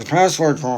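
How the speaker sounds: barely articulated, indistinct mumbling. Retelling telling friends what got the views: imitating own mumbling. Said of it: "Dude, stop mumbling".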